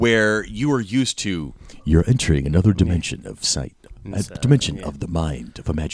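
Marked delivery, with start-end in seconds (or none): 1.8-6.0 narrator voice spoken through gritted teeth, jaw locked. Recalling the Twilight Zone narration, teeth gritted, jaw not moving: Rod Serling narrator voice. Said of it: "it's just that voice".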